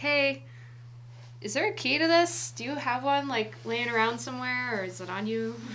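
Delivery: loud yelling, projected across a distance. Calling out in character to the old guy, asking for a key: yelling out to someone. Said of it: "I'm gonna yell out to him".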